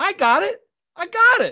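cocky, high-pitched and sure-sounding.

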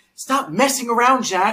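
shrill very high scolding yell. Recounting a man yelling at someone crawling on the ground, imitating someone yelling. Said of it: "he starts yelling at him".

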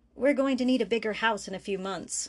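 plain

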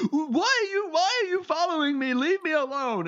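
emotional, upset tone. Game narrator voicing a chef character who notices he is being followed, emotional. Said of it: "he's getting emotional".

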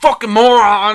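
very loud, high, play-acted enraged yelling. Retelling a movie character's line: imitating a very angry character. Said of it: "and he's so mad".

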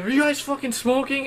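mock furious, fast, high angry outburst, rattled off. Speaker retelling what an angry man asked them, imitating an angry man. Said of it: "He's angry".

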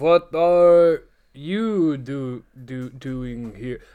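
put-on bad Russian accent. Imitating Ricky's line from the show: imitating Ricky's terrible Russian accent. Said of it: "Ricky gives a terrible, terrible Russian accent".

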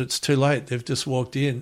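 normal talking voice

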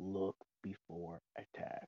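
hushed, barely audible, very quiet whisper. Warning the party in character about an ominous sound: whispering very quietly. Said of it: "I'm gonna just whisper very quietly".

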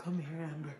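deep voice, dropped low. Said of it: "Beyonce with her deep ass voice should be like".

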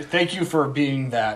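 slow, drawn-out, laughing sarcastic tone. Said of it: "I feel like you guys are being sarcastic".

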